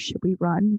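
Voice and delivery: put-on whisper. Retelling asking friends whether to run: retelling a whisper. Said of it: "I whisper".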